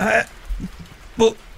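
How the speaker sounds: soft, very slow, gasping dying voice.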